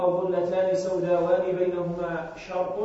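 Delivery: ordinary talk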